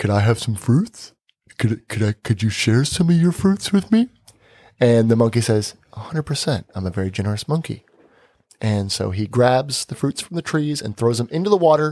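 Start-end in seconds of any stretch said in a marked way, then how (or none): 0.0-4.1 dim-witted, dumb, dopey put-on shark voice. Telling a story, the speaker voices the shark asking the monkey, imitating a dumb-sounding shark. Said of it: "in a kind of a dumb way".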